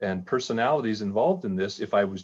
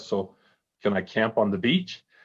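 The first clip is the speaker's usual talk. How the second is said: quiet mutter under the breath. Retelling sitting at a fully booked hotel, retold mutter under breath. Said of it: "I kind of muttered under my breath".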